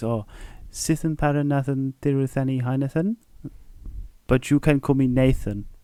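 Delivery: tiny, slight, soft little voice. Retelling a small Sri Lankan customer giving his name, imitating a small little voice. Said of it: "really small little voice".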